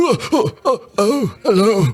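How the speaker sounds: put-on very high, jumpy, startled old man voice. Voicing a character startled by a tap on the shoulder, startled old man voice. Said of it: "subject everybody to the old man voice".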